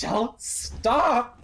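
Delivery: breaking down in tears. Voicing a character being led away from a cloud: breaking down crying. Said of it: "breaking down now".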